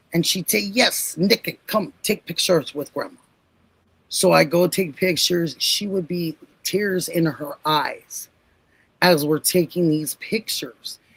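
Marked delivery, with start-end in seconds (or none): 0.6-3.1 put-on thick, heavy Slavic accent. Quoting grandma in a family story, imitating her thick Slavic accent. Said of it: "she had this thick Slavic accent".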